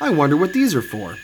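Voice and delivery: ordinary talk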